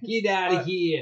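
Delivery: street-corner New York accent. Repeating a quoted remark, said like a New Yorker. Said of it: "Exactly like that".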